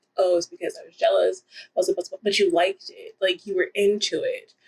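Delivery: plain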